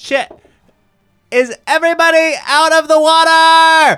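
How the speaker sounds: very high, very loud, shrill yell, "water" stretched. In a tabletop game scene, a player calls out to the party: yelling. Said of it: "Why are you yelling?".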